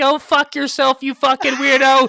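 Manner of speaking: put-on very high, very loud squeaky shrieking kid yell. Recalling playing Modern Warfare with friends, the speaker mimics their past self as a squeaky-voiced gamer kid. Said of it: "one of those squeaky voice little fucking weirdos".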